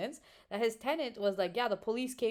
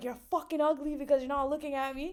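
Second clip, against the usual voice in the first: mild, snapping, half-shouted light yell; 6 semitones higher than usual. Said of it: "he was shouting".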